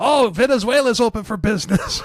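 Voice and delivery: very high, keen, overeager excited voice. Retelling how incels react to news: imitating eager incels. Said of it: "all the incels are like".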